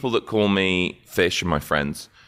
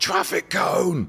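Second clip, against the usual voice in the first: put-on yelling, high and sudden; 12 semitones higher than usual. Describing a plan to call out at another speaker in the street: imagined yell. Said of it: "I'll just yell something like".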